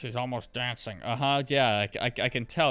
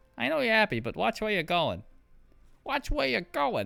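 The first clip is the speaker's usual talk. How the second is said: very high voice with big pitch swoops; 10 semitones higher than usual. Quoting a game character's voice line while watching a scene: Alchemist voice line. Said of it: "I was quoting an Alchemist voice line".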